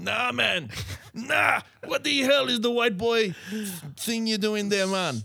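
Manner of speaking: very high-pitched, mocking, laughing through the words. Retelling how the people at an audition laughed at them, imitating someone laughing. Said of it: "killing themselves, laughing, going".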